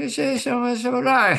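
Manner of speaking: soft, mumbled put-on voice. Doing an impression that only Hunter can understand: very soft Biden impression. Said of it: "going so soft like that".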